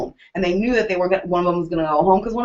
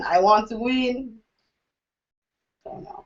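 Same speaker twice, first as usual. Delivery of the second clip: put-on Russian accent, full of feeling; 3 semitones higher, 5 dB quieter than usual. Trying out several different voices, playing an emotional russian accent. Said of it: "I'm emotional Russian".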